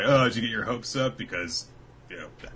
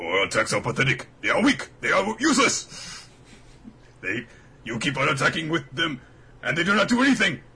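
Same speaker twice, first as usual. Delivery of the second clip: high, loud, booming wacky cartoon villain voice; 7 semitones higher, 5 dB louder than usual. Asked whether either of them has a good one, the speaker tries it: Mojo Jojo voice. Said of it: "Do either of us have a good Mojo Jojo?".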